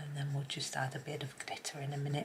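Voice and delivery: soft, unvoiced, breathy whisper.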